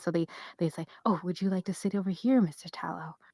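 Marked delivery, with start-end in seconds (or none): 1.1-3.1 gentle, soft, kindly voice. A younger person caring for an older man, offering him a seat; soft, kind voice. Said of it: "but in a very soft, kind way".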